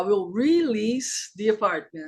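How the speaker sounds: slow delivery, "release" stressed and stretched out.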